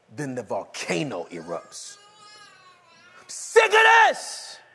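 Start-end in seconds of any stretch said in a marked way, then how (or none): 3.2-4.6 very loud, very high, angry, drawn-out yell. Acting out a spouse erupting in an argument: acted yelling. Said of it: "Why are you yelling?".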